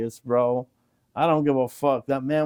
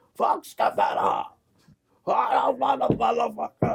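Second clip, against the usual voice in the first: put-on high, far-off drunken yelling and screaming. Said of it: "the motherfucker that started screaming".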